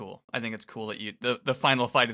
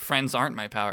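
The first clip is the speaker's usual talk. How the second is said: normal talking voice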